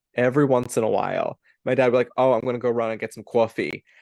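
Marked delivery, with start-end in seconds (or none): 2.2-3.8 put-on Yonkers accent. Imitating dad saying he'll go get coffee, in a Yonkers accent. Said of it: "none of my family has like a Yonkers accent, but every so often... when he says it like that".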